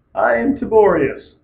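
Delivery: voice snapping and breaking as it goes. Introducing oneself to viewers at the end of an episode, voice cracking. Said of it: "without my voice cracking".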